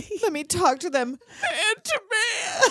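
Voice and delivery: put-on tearful speech. Retelling a movie scene, a character pleading: imitating talking through tears. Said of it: "He's like all through tears".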